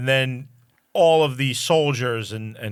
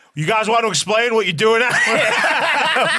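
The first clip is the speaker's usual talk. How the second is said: very high, loud, demanding yell; 12 semitones higher, 6 dB louder than usual. Retelling how the governor yells at the people in the swamp, imitating him yelling. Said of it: "And he yells at them".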